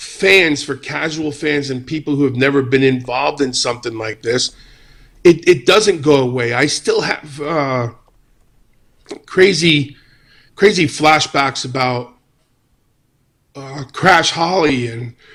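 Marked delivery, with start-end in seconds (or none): 6.5-15.1 choked-up, emotional voice catching. Recalling flashbacks about crash holly, getting choked up. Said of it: "I'm getting choked up again".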